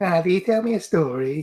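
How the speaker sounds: high, eerie, unsettling put-on voice. Asked to break out the creepy voice: creepy voice. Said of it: "break out that creepy voice".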